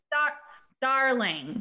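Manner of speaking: put-on "darling" said coldly, with no warmth at all. Imitating how an actor says darling, with no love in it. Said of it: "he says it like".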